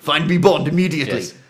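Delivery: very plummy, upper-class, posh British put-on voice. Listing Bond-film clichés, the speaker acts out someone demanding Bond: hugely posh voice. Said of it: "Someone being hugely posh going".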